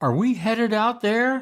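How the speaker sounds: high, nervous tone. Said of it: "I nervously asked the skipper".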